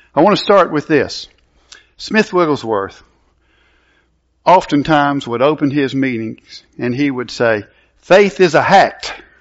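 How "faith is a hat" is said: strong, heavy brogue, slow and drawn out. A teacher quotes how a man opened his meetings: Smith Wigglesworth brogue imitation. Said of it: "my imitation of his strong brogue accent".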